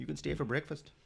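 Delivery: fake Canadian accent, jokey. Joking along in a bit about polite Canadians: put-on Canadian accent. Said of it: "Was that your Canadian?".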